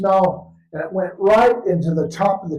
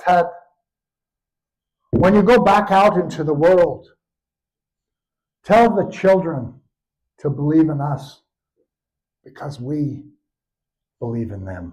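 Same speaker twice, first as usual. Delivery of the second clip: shaky, trembling voice close to tears; 4 semitones lower than usual. Quoting a man's final goodbye words to the speaker, imitating a shaky voice. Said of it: "he said with a shaky voice".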